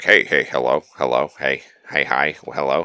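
slow, drawn-out, chatty talking flower voice. Imitating a talking flower in a game that keeps greeting the player: imitating chatty talking flower. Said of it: "where the flower's like".

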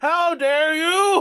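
put-on feeble, weak, high boyish yell that comes out small. Retelling a scene where Goku confronts someone, in Goku's weak boyish yell. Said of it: "he forgot how to yell in a big man voice".

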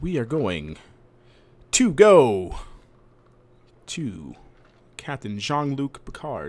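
very slow, grand, swooping theatrical delivery. Transitioning to the next topic when asked: Shatner impression. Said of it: "your best Shatner impression".

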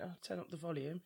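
ordinary delivery

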